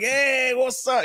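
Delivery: very high, loose, casual, tossed-off delivery. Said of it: "Key and Peele have a good skit with Obama".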